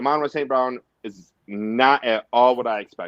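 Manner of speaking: plain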